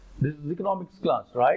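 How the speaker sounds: ordinary talk, nothing marked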